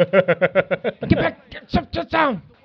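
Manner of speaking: mock, loud, high shouted yelling. Recounting walking in a parade with Chad, retelling yelling at kids. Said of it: "We're yelling at them the whole time".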